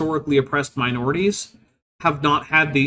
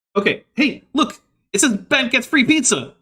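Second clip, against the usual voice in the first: very high-pitched chattering voice; 9 semitones higher than usual. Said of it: "I'm talking fast because we gotta wrap this up".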